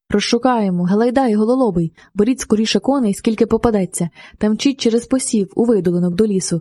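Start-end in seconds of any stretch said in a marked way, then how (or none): none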